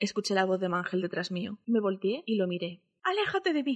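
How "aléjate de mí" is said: piercing, very high, shrill shouting. The narrator turns to face the man calling from behind: shouting. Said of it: "le grité".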